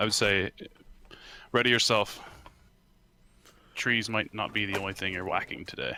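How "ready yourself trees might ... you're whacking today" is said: hushed, soft, low-key quiet voice. Playing a tabletop game, speaker's character addresses a companion: quiet voice. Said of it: "I say in in a quiet voice".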